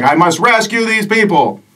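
high, heroic paladin voice, called out loudly. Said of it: "He's like".

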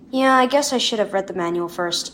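ordinary delivery

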